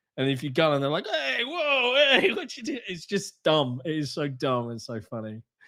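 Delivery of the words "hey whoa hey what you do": put-on high-pitched New Yorker accent. Imitating game characters who shove the player: stereotypical New Yorker accent. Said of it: "very stereotypical New Yorker accent".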